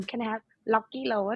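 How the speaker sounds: put-on Thai-accented English. Telling about ordering Rocky Road, showing how it sounds in a Thai accent: Thai accent. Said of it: "if you say in Thai accent like".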